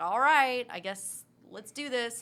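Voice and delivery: loud, reluctant, snarky, grudging tone. Retelling how a film character agreed to fight: imitating a snarky reluctant character. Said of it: "snarky, wanna go home".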